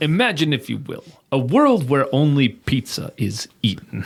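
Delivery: slow, deliberate, drawn-out celebrity voice. Doing a Twilight Zone style opening as a joke: Rod Serling impression. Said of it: "That was pretty good".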